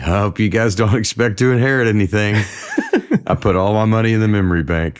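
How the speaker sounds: nervously laughing voice. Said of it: "my dad would start sort of nervously laughing".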